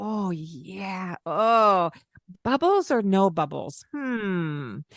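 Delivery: very slow, eager, enthusiastic show of interest. Showing how to talk to yourself while running a bath: put-on enthusiastic, interested tone. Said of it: "be enthusiastic with your tone of voice and interested".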